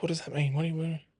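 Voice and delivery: imitated panicked voice. Retelling his missus asking what's wrong: imitating someone panicking. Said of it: "ultimate panic".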